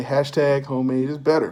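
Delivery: ordinary delivery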